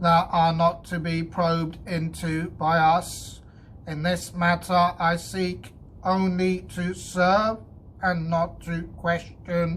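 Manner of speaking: stiff, devout, very loud and high. Narrator reads a robot answering the men's challenge, stiff, devout reply. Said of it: "[name] was annoyed. / he raised his eyes devoutly upward".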